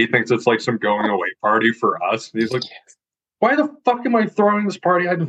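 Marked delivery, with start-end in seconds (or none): 3.4-5.1 very high, fed-up, pissed-off angry outburst. Retelling a farmer forced to clear his shop for a party, imitating someone pissed off. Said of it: "He's all pissed about it".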